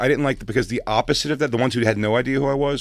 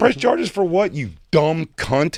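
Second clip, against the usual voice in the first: put-on heated, furious, higher-pitched voice; 6 semitones higher, 3 dB louder than usual. Retelling what was said back when someone wanted to press charges: retelling a furious retort. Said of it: "Oh, I was furious".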